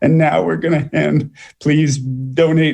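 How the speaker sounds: insincere cracking voice. Mocking speakers who ask for donations, imitating a breaking voice. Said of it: "their voice is breaking".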